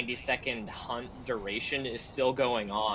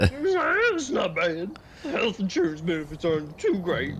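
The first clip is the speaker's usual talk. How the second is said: loud, swooping, weaselly cartoon character voice; 6 semitones higher, 5 dB louder than usual. Improvising a ghost answering questions about itself, speak in a cartoon weasel voice. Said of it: "like a cartoon weasel".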